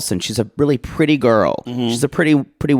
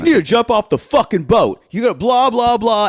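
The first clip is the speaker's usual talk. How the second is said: put-on screamed line, higher; 8 semitones higher than usual. Retelling a fight on the show, imitating someone screaming. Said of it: "Justin is screaming and going".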